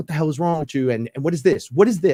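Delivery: high, furious, angry outburst. Retelling a confrontation over a dent in the car: retelling own angry outburst. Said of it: "I was so angry".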